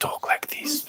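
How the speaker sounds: hushed ASMR whisper, very quiet, barely there. Showing how people talk in asmr videos: whispering.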